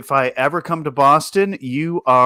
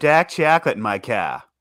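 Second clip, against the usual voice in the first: imitated Boston accent. Speaker shows off the test phrase they use for an accent, in a boston accent. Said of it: "my calibration phrase for my Boston accent is".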